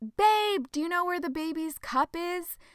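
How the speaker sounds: acted-out yelling, high-pitched, called out loud. Retelling her fiance calling from the living room: imitating Alfonso yelling out. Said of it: "He yells out".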